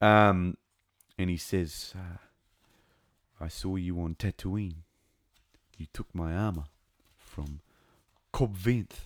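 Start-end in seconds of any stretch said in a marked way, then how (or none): 3.4-9.1 deep, low, put-on New Zealand accent. Quoting what a character says to him, in a low Kiwi accent. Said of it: "my voice gets really low when I put my accent on".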